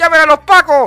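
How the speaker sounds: mock shout. Telling a story, the speaker re-enacts shouting for the police: retelling a shout. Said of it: "Y yo voy y grito".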